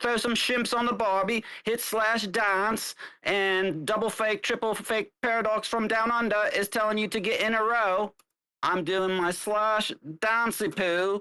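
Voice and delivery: full, all-out put-on Australian accent. Announcing a dance while someone takes photos, in an Australian accent. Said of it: "We're going full Australian".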